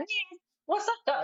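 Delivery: pitch way up, cartoon trickster rabbit style. Describing a favourite cartoon trickster: Bugs Bunny voice. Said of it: "the way that Bugs Bunny is like".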